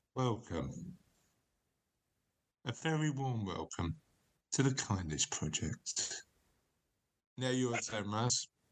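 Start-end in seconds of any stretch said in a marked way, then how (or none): 0.2-6.3 hushed, soft, slow, intimate close-mic voice. Taking a turn at a gentle, intimate podcast intro: intimate podcast welcome. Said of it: "you can't help leaning in".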